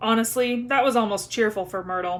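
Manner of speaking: ordinary delivery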